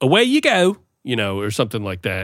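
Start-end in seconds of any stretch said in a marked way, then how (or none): 0.0-0.8 put-on British accent, pitched high. Imitating what a British guy would say: put-on British accent. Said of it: "A British guy would say something like".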